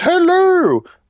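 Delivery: very high, squeaky nanny voice, pitched way up. Explaining where a greeting came from, the speaker does a Mrs. Doubtfire voice. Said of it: "Miss Doubtfire where she goes".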